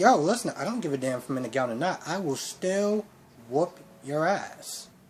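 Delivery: quiet, menacing, threatening tone. Retelling a character grabbing another and threatening him: imitating a threat. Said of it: "he starts yoking him up a little bit".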